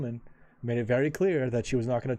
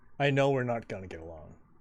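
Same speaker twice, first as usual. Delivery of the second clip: normal talking voice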